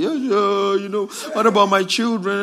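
put-on crying like a little baby. Imitating a caught gangster pleading with police: imitating someone crying like a baby. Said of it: "he was crying like a little baby".

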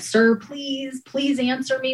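high, tearful begging on the verge of tears. Recalling a call recording, the speaker re-enacts pleading with a caller: imitating own tearful pleading. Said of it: "you could just hear me getting teared up".

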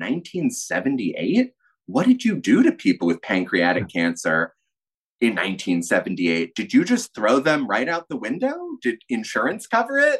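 heavy acted-out sarcasm with swooping pitch. Retelling own questions to a doctor about his graduation year: retelling own sarcastic questions. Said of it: "he didn't get the sarcasm".

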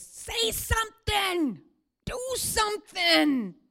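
screaming, shrill, drawn-out, very high and very loud. Voicing the impatient flesh demanding action: imitating the flesh screaming. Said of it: "he screams".

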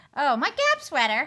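very loud, shrill, squeaky mocking take-off. Imitating a friend's line about a new sweater: high-pitched mocking impression. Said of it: "the thing that you love to say in a high-pitched voice".

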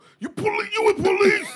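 put-on aggressive voice. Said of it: "that's how six nine talk".

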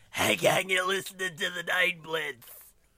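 put-on hoarse throat voice. Teasing a co-host, imitating his show intro: mocking a sore-throat voice. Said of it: "you got all fucked up throat".

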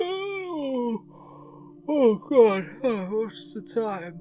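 very high, very slow, drawn-out groggy just-woken groan. Voicing a princess who groans while waking up: groggy waking groan. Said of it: "The princess groans, ... and goes".

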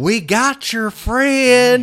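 menacing, shrill, very high-pitched, drawn-out country drawl. Retelling a scene at a boat, imitating one of the group in a mock-threatening country voice. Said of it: "it sounds so country and like what's threatening".

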